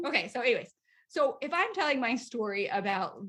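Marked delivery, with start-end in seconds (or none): none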